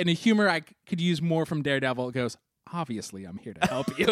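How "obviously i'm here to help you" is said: dry, low-voiced delivery. Retelling a TV scene, quoting Matt's reply: imitating Matt's dry delivery. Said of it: "And Matt very dryly".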